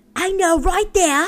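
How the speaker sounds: put-on obnoxious British accent. Imitating the obnoxious British way of talking: obnoxious British accent. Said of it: "the obnoxious British talking".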